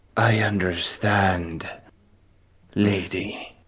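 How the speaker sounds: voice ringing with echo, reverberant. Game narrator voices a bowing planetar answering the lady; echoey voice. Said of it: "with an echoey voice says".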